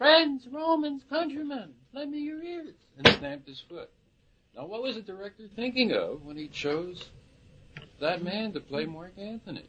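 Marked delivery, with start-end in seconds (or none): 0.0-2.7 very high, shrill, screamed delivery. Retelling an actor's poor delivery on stage: imitating someone screaming. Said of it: "and he screamed".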